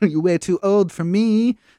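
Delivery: put-on weird high British accent. Retelling a scene where the character turns someone down: Ivy's weird British accent. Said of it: "She did some weird British accent during it".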